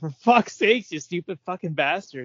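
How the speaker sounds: high, sobbing, tearful flipped-out meltdown. Retelling a film scene where a character flips out: imitating someone crying in an outburst. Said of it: "flips out and starts crying, like".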